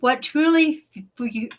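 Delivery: stumbling over words. Mid-speech to an audience, mouth not cooperating: stumbling over words. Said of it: "I'm having a little trouble with my mouth working".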